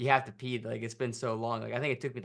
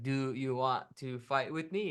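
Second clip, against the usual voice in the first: simple broken English. Retelling the mom challenging the dad, in broken English. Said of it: "like in broken English".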